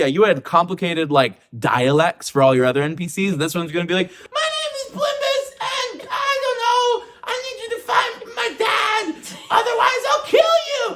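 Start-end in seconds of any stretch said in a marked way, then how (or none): 4.3-10.8 stupid-sounding tiny voice, very high-pitched. Mocking a player inventing a voice for a new NPC; stupid little Plimbus voice. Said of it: "a stupid little voice for Plimbus".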